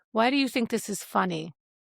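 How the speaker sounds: ordinary delivery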